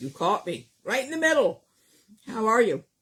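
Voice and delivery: talking with mouth full. Host opening the show while eating an apple, talking with mouth full. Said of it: "My mouth is still full".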